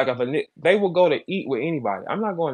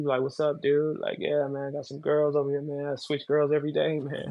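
put-on cool young guy voice, much quieter; 7 dB quieter than usual.

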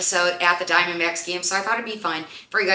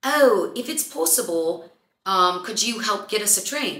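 polite imitated British accent; 3 semitones higher than usual. Retelling what a guy at the bar said to her: imitating a British accent. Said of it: "he had a British accent, so he said".

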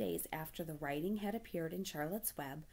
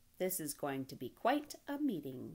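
ordinary delivery

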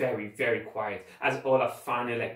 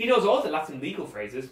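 ordinary delivery

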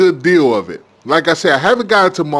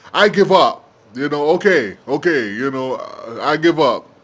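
plain

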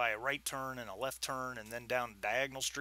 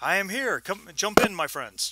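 very loud, high-pitched shouting; 6 semitones higher, 9 dB louder than usual. Narrating a scene, the speaker voices Al Hazred arriving by car, shouting out the window. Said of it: "He shouts out the window".

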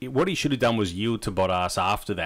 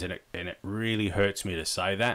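plain

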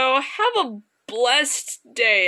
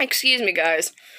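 plain

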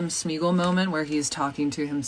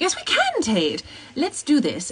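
animated, pitched-up put-on British accent; 8 semitones higher than usual. Answering a request for character quotes, in a British accent. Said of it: "Your British accent is so good for an American".

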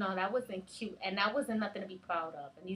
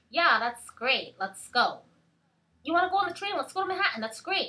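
put-on high, loud little-girl chatter; 6 semitones higher, 6 dB louder than usual. Showing how a lot of little girls talk, imitating little girls talking. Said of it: "A lot of these little girls talk like that".

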